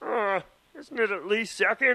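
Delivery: high, squeaky, put-on frog puppet voice. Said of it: "Kermit looks at him and he's like".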